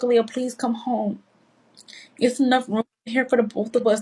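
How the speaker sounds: mock tearful, crying pleading voice. Retelling a phone call from mom begging her home: imitating mom crying. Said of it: "she was literally crying".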